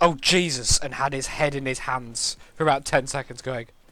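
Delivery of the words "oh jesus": sudden, loud, startling shout. Retelling a player's reaction to a jump scare: imitating Pro Jared shouting. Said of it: "just shouted".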